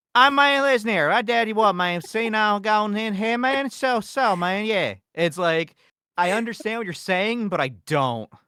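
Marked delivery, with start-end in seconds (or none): 0.1-4.9 put-on raised, half-swallowed, mumbled Appalachian accent. Describing an Appalachian version of Boomhauer to others, doing an Appalachian Boomhauer impression. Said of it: "Appalachian boomhauer is like".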